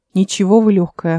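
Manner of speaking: ordinary delivery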